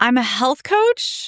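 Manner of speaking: "health coach" lifted with a questioning rising intonation. Recounting introducing herself at a job: 'health coach' rising like a question. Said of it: "I literally said it like this: ... Like it was a question".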